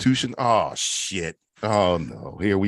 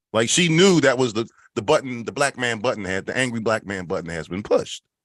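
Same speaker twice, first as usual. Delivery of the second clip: ordinary talk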